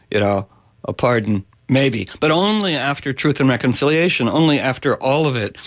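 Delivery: ordinary delivery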